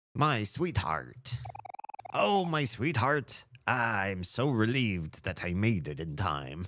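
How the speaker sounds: laid-on, put-on pirate accent. Recalling a pirate-captain character they once voiced, the speaker tries it again: pirate accent. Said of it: "Probably like a pirate".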